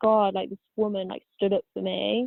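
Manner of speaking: usual speaking voice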